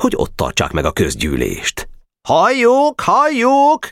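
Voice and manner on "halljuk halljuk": very high, shrill yelling. A club member calls out as the meeting assembles: shouting. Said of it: "Kiabált Barabás".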